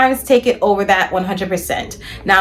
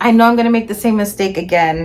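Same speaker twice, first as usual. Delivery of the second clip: ordinary talk, nothing marked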